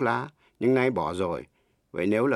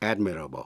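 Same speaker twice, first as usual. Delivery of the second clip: admirable said with heavy stress on first syllable AD; 6 semitones lower, 3 dB quieter than usual. English word stress lesson taught in Vietnamese: stress on AD in admirable. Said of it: "nhấn mạnh vần đầu".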